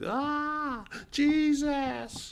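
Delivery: play-acted very high, drawn-out sobbing wail. Mocking people who cry out in distress: imitating someone crying and screaming. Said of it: "crying and screaming like some of you".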